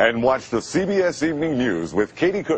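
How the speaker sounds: wide-ranging, booming network announcer promo voice.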